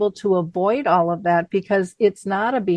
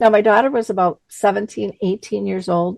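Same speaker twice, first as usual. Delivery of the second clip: plain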